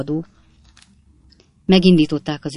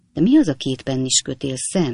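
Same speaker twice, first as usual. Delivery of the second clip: plain reading voice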